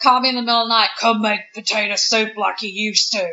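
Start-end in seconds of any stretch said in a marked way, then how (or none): 1.0-3.2 creepy, low demonic voice. Retelling what a woman said in the middle of the night, in a demon voice. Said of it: "She put on the demon voice".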